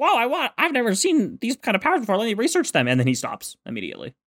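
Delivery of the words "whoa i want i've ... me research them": high, fast, thrilled, excited gushing. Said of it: "he's like".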